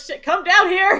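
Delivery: high, loud, slow yell. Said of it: "She's gonna be like".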